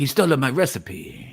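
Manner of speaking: put-on Italian accent. Doing a bit as an angry Italian chef: Italian accent. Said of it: "You do an Italian well".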